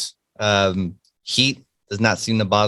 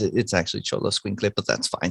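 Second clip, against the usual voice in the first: muttered under breath, much quieter; 6 dB quieter than usual. Retelling stepping forward when the mayor calls his name, muttered under breath. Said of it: "just under my breath".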